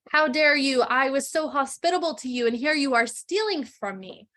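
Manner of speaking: outraged, angry beast voice. Retelling how a storyteller voiced the beast's lines, in a put-on angry beast voice. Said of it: "in like an angry beastie voice".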